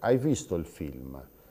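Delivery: falling pitch at the end on film. Showing how Sardinians ask questions: falling pitch at question end. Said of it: "con questa curva eh, discendente".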